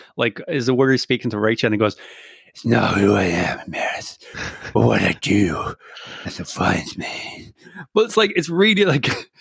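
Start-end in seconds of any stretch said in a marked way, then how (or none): 2.6-7.5 low, deep, slow, mushy, gummy hero voice. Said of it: "it's like his teeth are missing".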